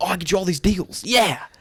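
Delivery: very high, shrieking, high-pitched screaming shout. Describing how Rick talks to customers, imitating Rick screaming. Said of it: "like screaming at them".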